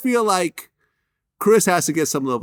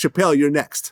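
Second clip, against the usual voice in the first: normal talking voice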